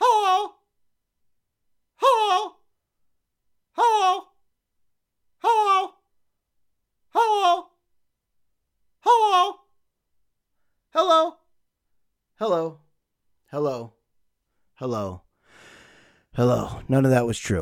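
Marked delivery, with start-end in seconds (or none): 0.0-16.8 very high, drawn-out, swooping parrot voice. Podcast host repeating a greeting over and over, parrot impression. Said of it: "my parrot impression".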